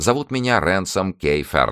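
usual speaking voice

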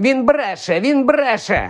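high-pitched, disembodied voice. Reading a scene where a voice speaks though Quirrell's lips don't move; high voice. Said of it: "пролунав високий голос".

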